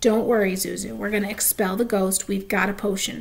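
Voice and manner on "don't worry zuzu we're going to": usual speaking voice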